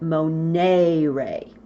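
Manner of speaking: long e of monere stressed and drawn out. Teaching verb conjugation from the infinitive, stress the long E in monere. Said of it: "to stress that long E, I like to pronounce it monere".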